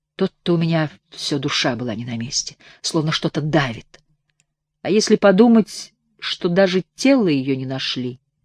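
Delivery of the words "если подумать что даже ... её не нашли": ordinary delivery, nothing marked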